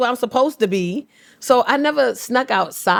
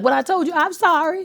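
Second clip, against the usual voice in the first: stern, scolding voice; 3 semitones higher than usual. Retelling a mom's words after a pop: imitating mom scolding. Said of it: "My mom would pop me once and be like".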